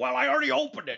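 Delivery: very high, squeaky, rough, creaky put-on voice. Retelling answering a friend's phone to his mother: imitating Eric's voice. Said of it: "I go into my E voice".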